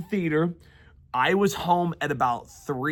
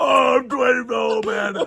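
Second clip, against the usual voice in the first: put-on smoker's voice, higher and louder; 7 semitones higher, 5 dB louder than usual. Joking about being fifty in twenty years: put-on smoker's voice. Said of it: "Are you smoking?".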